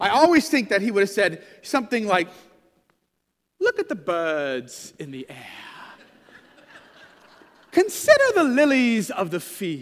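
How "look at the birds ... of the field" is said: put-on low, swooping, lyrical English accent, "birds" stretched out. Quoting a teaching, speaker imagines Jesus speaking in an English accent. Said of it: "I always think Jesus said it in an English accent".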